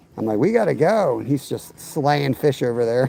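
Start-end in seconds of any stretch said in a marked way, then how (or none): 0.4-1.2 urgent, raised, loud yell. Retelling telling him it was time to go: imitating own past yelling. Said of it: "I'm yelling at him to help me".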